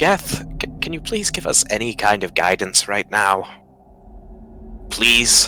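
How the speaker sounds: put-on weary, sighing voice. Voicing a knight asking a deity for guidance: sighing plea in character. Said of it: "Sir Oust gives a sigh and just says".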